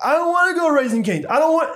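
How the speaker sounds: put-on very high, shrieking, screaming child tantrum, acted. Retelling a child's protest in the drive-thru: imitating a screaming child. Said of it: "he's screaming".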